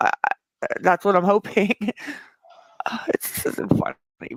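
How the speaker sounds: talking through giggles. Speaker talking with others while supposed to be crying, giggling while talking. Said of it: "She's sitting there giggling".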